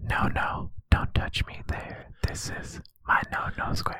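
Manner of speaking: whispering. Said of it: "being whispered to me".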